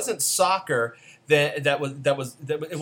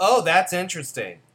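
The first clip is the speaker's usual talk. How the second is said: mock condescending, snooty tone; 4 semitones higher, 4 dB louder than usual. Recapping a movie, quoting a mom character at the church: mock-condescending. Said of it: "she condescendingly said".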